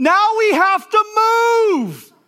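put-on weeping boy-like yell, very high, very slow, drawn-out. Retelling a four-year-old boy's cry on the counter: imitating a weeping boy shouting. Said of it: "he shouts at the top of his lungs".

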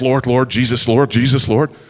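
put-on under-breath muttering. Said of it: "pray under my breath".

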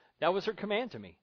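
plain

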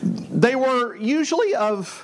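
breaking voice, cracking mid-phrase. Speaker explaining history when the voice cracks mid-sentence. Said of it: "My voice cracked".

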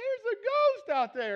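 high, slow, freaked-out spooked cry.

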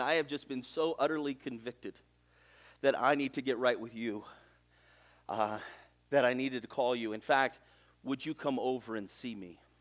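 choked words broken up by heavy sobbing. Retelling a man's phone call to you, imitating him sobbing. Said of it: "through these massive sobs, he's saying".

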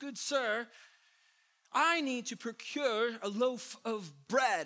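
mock slightly perturbed, slow and high pitch. Retelling a joke where a man asks the baker again, acting perturbed. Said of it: "or whatever you think that accent is".

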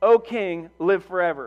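slow, mocking, heavily sarcastic tone. Acting out the queen greeting the king: very sarcastic. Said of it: "she is speaking very, very sarcastically".

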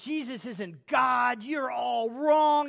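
loud, belittling, mocking dismissal. Speaker recounting a man who went after them, imitating someone mocking. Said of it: "just mocking me".

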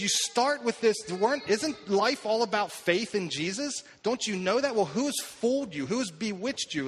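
put-on, cutting, biting sarcastic scolding tone. Retelling a letter's rebuke to a church: imitating a sarcastic, biting rebuke. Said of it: "He is sarcastic. He is biting".

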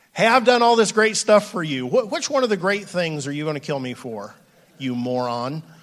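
mock, acted, sarcastic tone. A speaker acts out a paraphrase of a quoted question, with mock sarcasm. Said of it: "I'm pretty confident he's being sarcastic here".

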